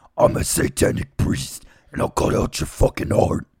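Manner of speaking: loud, demonic voice. Asked to do the demon voice one more time: demon voice. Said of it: "Can you do the demon voice one more time".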